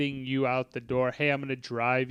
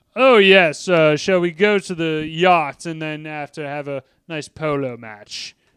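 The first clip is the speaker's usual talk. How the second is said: loud, drawn-out, fancy, upper-crust posh voice; 3 semitones higher, 9 dB louder than usual. Mocking how nobody in Philly really talks: mocking rich-people talk. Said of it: "nobody fucking talks like that".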